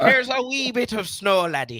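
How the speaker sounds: very high-pitched, put-on stage Irish accent. Repeating another speaker's line back to them in an Irish accent. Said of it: "That Irish? That's Irish".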